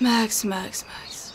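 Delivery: urgent, soft, unvoiced whisper.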